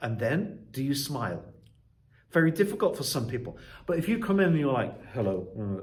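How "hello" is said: low mumble, voice directed down and away. Teaching how to greet a class, mumbles hello looking down. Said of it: "you're mumbling down like this".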